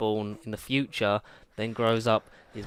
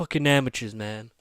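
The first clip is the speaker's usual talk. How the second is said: angry yelling; 3 dB louder than usual. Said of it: "he's shouting at him like".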